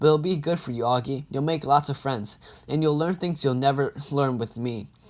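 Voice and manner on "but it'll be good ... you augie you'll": plain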